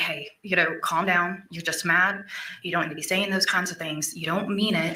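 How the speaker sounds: usual speaking voice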